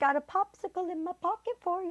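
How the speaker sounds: put-on very high, creepy old-man voice. Discussing a character worse than Quagmire, Herbert the pervert voice. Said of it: "that the old man".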